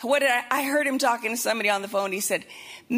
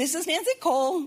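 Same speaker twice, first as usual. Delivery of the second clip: put-on cheery voice, higher pitch; 4 semitones higher than usual. Imitating a friend's voicemail greeting: imitating Nancy Cole's cheery voicemail. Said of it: "very cheery, cheery".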